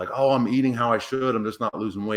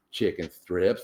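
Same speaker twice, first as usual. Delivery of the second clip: put-on slight lisp; 3 semitones lower than usual. Retelling asking a man about his meals, imitating Cheese's lisp. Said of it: "he had a little lisp".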